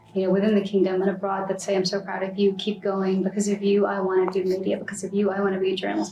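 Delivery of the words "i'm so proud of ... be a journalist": usual speaking voice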